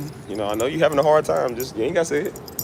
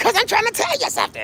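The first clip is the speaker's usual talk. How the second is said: put-on preacher-like delivery, much higher pitch. Retelling how a friend who stuttered used to talk, like a preacher. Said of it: "why you say it like a preacher?".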